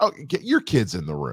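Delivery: ordinary talk, nothing marked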